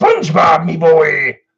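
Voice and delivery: very high, loud, swooping voice. Doing a requested voice for the audience: Mister Krabs voice. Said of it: "do what as Mister Krabs' voice?".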